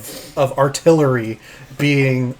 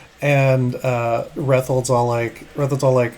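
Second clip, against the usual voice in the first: usual speaking voice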